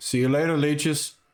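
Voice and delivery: high, shouted-back yell. Walking down the street, the guy yells back at those outside, yelling. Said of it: "the guy he just yells back".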